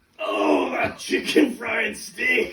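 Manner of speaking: slow, grunted, drawn-out remark. Retelling what a man in the next bathroom stall said: imitating a grunting man. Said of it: "he just grunts and says".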